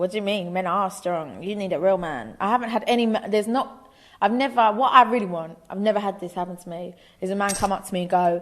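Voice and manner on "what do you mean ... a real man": normal talking voice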